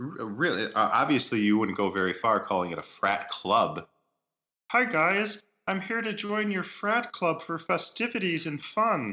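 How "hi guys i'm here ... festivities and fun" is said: very high, squeezed-up frog puppet voice. Joking about joining a frat club, speaking in a Kermit voice. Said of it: "Is that you, Kermit?".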